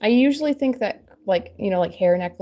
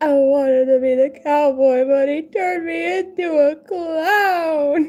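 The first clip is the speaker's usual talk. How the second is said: put-on very slow, sobbing, high crying child voice; 9 semitones higher, 5 dB louder than usual. Retelling how her son, crying, refused to be the clown: imitating a crying child. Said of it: "And he came over crying".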